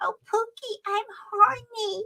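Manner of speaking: dopey voice, pitched very high, slow and stretched out. Recalling a movie role the speaker can't stand, stupid Lesley Ann Warren voice. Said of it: "with that stupid voice".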